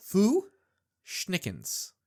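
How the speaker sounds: slow, deliberate, sounded-out pronunciation. Saying a band's name again as asked, slowly for a five-year-old. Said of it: "slow for, like, a five-year-old".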